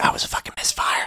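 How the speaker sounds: whispered voice. Retelling a movie scene where a character is overheard: imitating someone whispering. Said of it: "Atkins hears him whisper".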